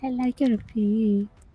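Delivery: small animal character voice. Answering a request to make the lemur sound like Mort: Mort voice. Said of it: "can you make the lemur sound like Mort?".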